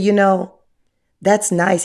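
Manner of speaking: mock very sweet voice. Retelling what a man once told the speaker, imitating a sweet voice. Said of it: "he told me in the sweetest voice".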